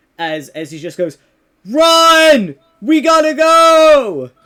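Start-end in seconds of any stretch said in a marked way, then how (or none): 1.6-4.2 booming, very loud, high, very slow drawn-out shout. Narrating Kyle telling the others to go before staff comes, shouting across the room. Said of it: "Kyle kind of shouts from across the room".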